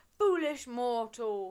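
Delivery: thundering, booming giant's bellow, very loud. Retelling the story, the speaker voices the giant turning on Percy: Polyphemus bellowing. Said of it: "he bellowed".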